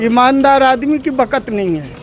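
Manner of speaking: ordinary delivery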